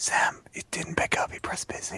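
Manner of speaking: hushed whisper. Speaking to sam during a group call: whispering. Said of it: "Why are we whispering?".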